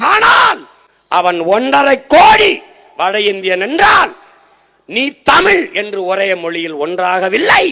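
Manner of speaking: shouting. Making a point to listeners, shouting. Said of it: "ஏன் கத்துற?".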